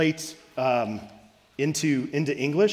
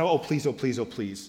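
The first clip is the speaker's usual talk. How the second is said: put-on cute, pleading young child's voice; 2 semitones lower than usual. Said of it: "He doesn't do what my youngest son Caleb says".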